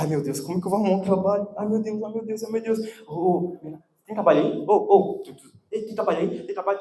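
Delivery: mock rushed, despairing, desperate fretting. The speaker acts out a past self's worry about finding work: acting out desperation.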